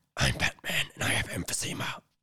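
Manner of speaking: whispered, breathy, hushed wheeze with coughing. On a Halloween podcast, joking around in a smoker's Batman voice. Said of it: "You sound like you smoke a lot".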